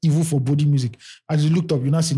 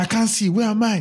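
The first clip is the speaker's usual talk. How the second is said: high, screaming cry, calling out into nothing; 7 semitones higher than usual. Retelling a story where a trapped man screams inside another, retelling a scream. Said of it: "starts screaming inside him".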